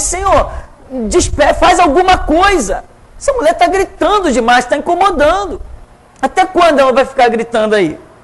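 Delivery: put-on high, impatient, exasperated complaining. Retelling how the disciples, unable to bear it, beg their master: acting out exasperated disciples. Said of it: "Eles não resistem".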